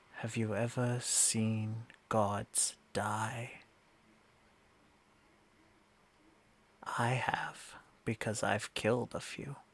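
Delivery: close, hushed whisper right at the ear. Voicing a being who kneels and speaks into a player's ear: whispering in character. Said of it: "whispers into your ear and says".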